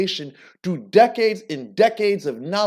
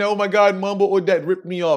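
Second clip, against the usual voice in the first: mock crying voice. Imitating people who come crying about being ripped off: imitating someone crying. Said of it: "you guys are crying, saying".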